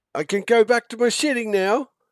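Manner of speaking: very high-pitched, loud half-orc voice. Voicing a half-orc captain asked to come help: half-orc captain voice. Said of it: "the half-orc captain pulls his strides up and looks at you and says".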